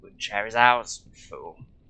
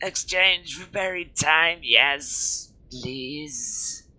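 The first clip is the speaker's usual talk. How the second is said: very slow, high, throaty wheezing voice; 5 semitones higher than usual. Voicing the cloaked figure as it beckons to you, in a throaty high-pitched voice. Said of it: "its voice throaty and high-pitched".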